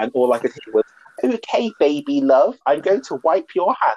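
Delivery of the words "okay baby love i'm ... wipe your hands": put-on slow, high, odd British accent. Retelling what she heard on the show: Dorit's accent. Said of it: "'cause I love Dorit's accent".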